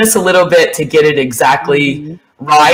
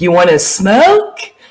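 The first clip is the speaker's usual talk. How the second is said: cute, little put-on voice; 4 semitones higher than usual. Imitating a friend offering a smoke at a party: Cynthia's cute voice. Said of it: "this really cute voice she does".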